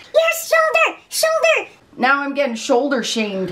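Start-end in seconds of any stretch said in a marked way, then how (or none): 0.1-1.7 very high, indignant, scolding yell. Imitating commenters complaining about a bare shoulder: imitating commenters yelling. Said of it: "They're probably yelling right now".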